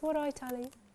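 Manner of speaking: imitated Birmingham accent. Retelling how mum greets on the phone: imitating mum's Brummie accent. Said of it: "She phones me up and she goes".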